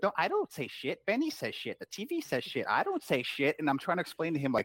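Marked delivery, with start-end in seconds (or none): 0.0-3.6 put-on high, sing-song, insistent toddler voice. Retelling what the three-year-old son answers when told not to swear: imitating Declan. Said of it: "He goes".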